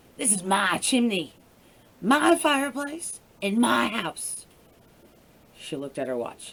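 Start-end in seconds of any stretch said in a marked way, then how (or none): 0.2-4.5 slow, croaky voice with words drawn out. Reading a story aloud, voicing a woman in her own house, croaking voice. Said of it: "she croaked".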